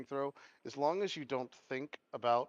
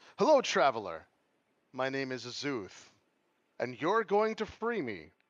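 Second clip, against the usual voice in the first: loud, big, swooping godlike voice; 7 dB louder than usual. Voicing a being who floods a player's mind: voicing the god Azuth. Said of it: "this being floods your mind. and he says".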